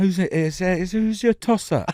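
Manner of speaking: put-on British accent. Co-host trying the phrase out on the other host, in a put-on British accent. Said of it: "if you say with a British accent".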